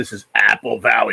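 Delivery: slow, rough, creaky, smoke-wrecked voice. Recalling a man's gimmick whenever he keyed up, imitating a heavy smoker's voice. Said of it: "his voice sounded like he smoked seven packs".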